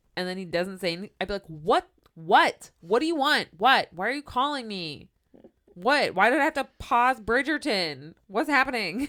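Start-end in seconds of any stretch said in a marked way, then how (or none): 1.5-9.1 acted-out irritated exasperation, high-pitched and loud. Acting out answering a voice that calls and then stays silent: acting mad. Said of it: "this mimic would just make me mad".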